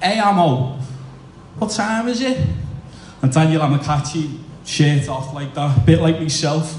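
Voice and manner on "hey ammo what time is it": loud, pitched-up, thick broad Scouse call. A speaker recalls the captain shouting across the dressing room, in thick Scouse as Dave Watson. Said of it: "dead scouts".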